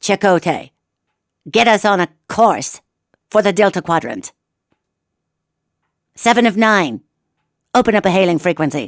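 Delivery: commanding, authoritative starship captain voice. Doing a Star Trek Voyager bit to see if it brings back memories, Kathryn Janeway voice. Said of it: "I feel like Catherine Janeway today".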